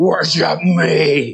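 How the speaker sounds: scary, menacing demon voice, "me" drawn out. Picturing Satan coming into your room: Satan's deep voice. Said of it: "he's got this deep voice, and he's like".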